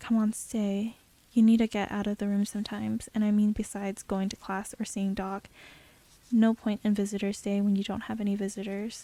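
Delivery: plain reading voice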